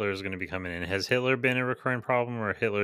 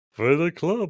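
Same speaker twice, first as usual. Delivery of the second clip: dumb-sounding voice, pitched a bit higher; 6 semitones higher, 4 dB louder than usual. Describing how club bouncers sound in their head, doing Barney Rubble voice. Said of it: "We're doing like a duh".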